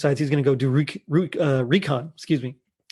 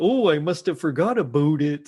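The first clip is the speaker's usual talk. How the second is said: phony, put-on Canadian accent. Retelling a scene where a character fakes an accent on a walkie: fake canadian accent.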